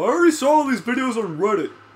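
mocking, high, loud, rattled-off rant.

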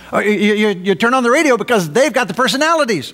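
facetious tone. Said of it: "I say that facetiously".

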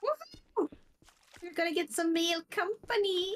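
way too excited, very high-pitched cheering whoop. Saying they are about to go buy a goat, very excited. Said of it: "you sound way too excited over that".

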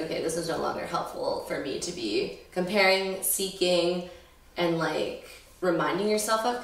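usual speaking voice

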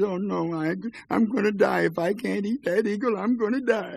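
put-on high, drawn-out, sobbing whine of a little boy. Telling a folk tale, voicing a little boy begging his mother: crying and whining. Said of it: "the little boy began to cry, you know, and whine".

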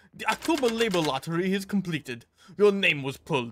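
loud, bad Russian accent. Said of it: "I can't do Russian".

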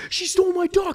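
put-on angry screaming. Retelling a man screaming at a woman over a duck, imitating an angry scream. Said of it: "he's screaming at her like".

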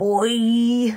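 drawn-out, stretched long, cartoonishly high voice. Doing the dad from a favourite episode, Homer Simpson voice. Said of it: "I'm being the dad Homer from the show Homer Simpson, but only in the first season when his voice was different".

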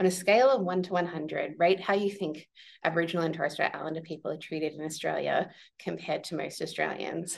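plain

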